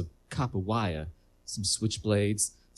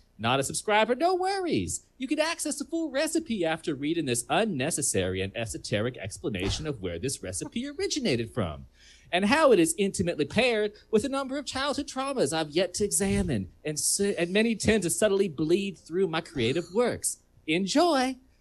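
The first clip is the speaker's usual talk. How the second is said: put-on Southern accent, pitched high; 10 semitones higher than usual. On a call, performing a made-up food blog recipe intro in a southern accent. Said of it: "I have to do these southern voices".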